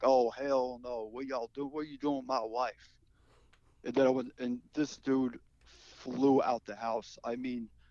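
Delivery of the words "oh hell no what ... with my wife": best-effort, put-on Southern American accent. Confronting a man about his wife, in a Southern American accent. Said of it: "in the best, you know, Southern accent I could pull off".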